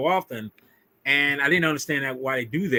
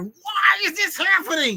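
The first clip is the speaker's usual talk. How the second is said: screaming, pitched higher. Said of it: "I'm screaming like".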